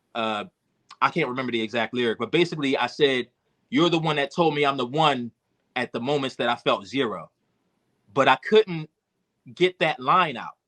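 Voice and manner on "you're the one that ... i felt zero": ordinary talk, nothing marked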